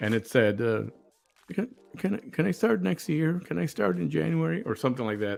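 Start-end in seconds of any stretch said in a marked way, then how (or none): 1.5-4.6 tiny, high-pitched mousy voice. Retelling what a woman said when ordered to pay child support, imitating a tiny mousy voice. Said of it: "This little tiny tiny mousy voice came out".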